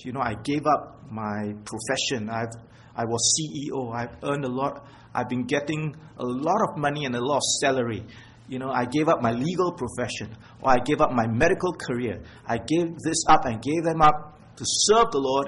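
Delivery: ordinary talk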